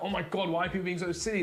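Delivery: normal talking voice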